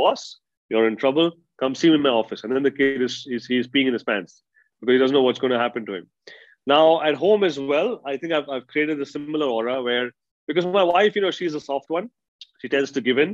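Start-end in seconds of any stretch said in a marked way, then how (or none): none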